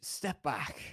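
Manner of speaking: faded, thinned-out voice. Game master voicing a figure who speaks to the players again, in a faded, slightly higher voice. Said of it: "says again in a more faded voice, a slightly higher pitch".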